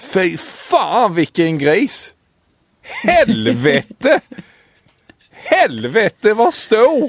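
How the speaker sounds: put-on high-pitched Småland accent. On a podcast, retelling an angling clip in a Småland dialect. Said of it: "jag kan bara prata angelfiske i Sävsjöström småländskan".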